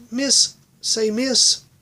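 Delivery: tiny, high, squeaky mouse voice. Narrator reading a story voices the mouse calling out, squeaky mouse voice. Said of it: "It was like a squeak".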